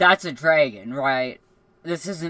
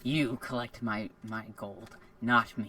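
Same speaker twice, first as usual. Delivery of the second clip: very quiet, low, hushed, menacing, sinister snake voice; 5 semitones lower, 10 dB quieter than usual. Playing a character, answering the group in a sinister snake voice. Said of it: "in a sinister snake voice".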